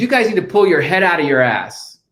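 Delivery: mock exasperated, mild, irate yell. Retelling a man yelling at a U17 boys game, retelling a yell at full volume. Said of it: "he just yells at the top of his lungs".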